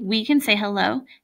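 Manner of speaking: plain reading voice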